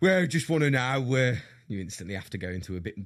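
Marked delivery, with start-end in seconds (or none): 0.0-1.4 put-on more manly voice. Retelling greeting a rough plasterer, imitating own manlier voice. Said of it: "be a bit more manly".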